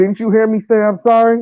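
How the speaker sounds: very high-pitched delivery with attitude. Describing how they plan to apologize, demonstrating: apologizing with an attitude. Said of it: "apologize with an attitude".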